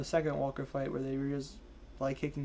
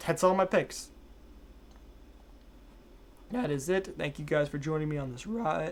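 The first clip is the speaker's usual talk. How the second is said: cracking, breaking voice. Host wrapping up the picks and thanking viewers, voice cracking. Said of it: "my voice is cracking".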